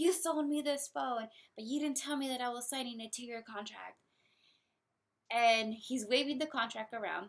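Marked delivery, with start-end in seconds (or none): 0.0-4.0 play-acted furious, venting, angry shout. Retelling how an angry customer stormed in, imitating a customer yelling. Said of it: "He is yelling".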